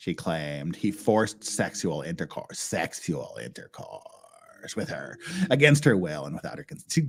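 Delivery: put-on creaky vocal-fry voice. Reading out a client's claim from a document: creaky vocal-fry voice. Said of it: "you made me do this voice. ... vocal fry".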